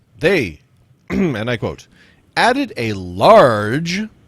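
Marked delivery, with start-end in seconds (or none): 2.8-4.0 large leaned on with heavy stress. Quoting someone's words aloud, with stress on large. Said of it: "I'm putting emphasis on there".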